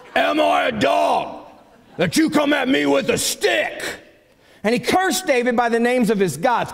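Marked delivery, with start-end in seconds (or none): 0.2-3.9 scornful, contemptuous, sneering. Retelling Goliath sneering at David: sneering Goliath line. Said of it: "You gotta say it like that".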